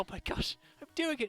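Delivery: teary-eyed excitement. Voicing a character who just solved a puzzle, crying with amazed joy. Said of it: "tears form in his eyes ... he's just like".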